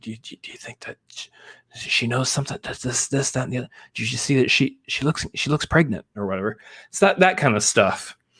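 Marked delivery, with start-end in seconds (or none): 0.0-6.6 much softer, hushed whisper under the breath. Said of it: "They're quietly whispering to themselves".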